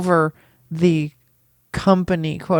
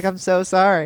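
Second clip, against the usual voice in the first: mock tearful, crying voice. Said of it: "crying a tear".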